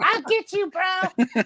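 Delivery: squeaky little voice, very high. A speaker shows how he would say the line, in a squeaky voice. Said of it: "in a squeaky voice".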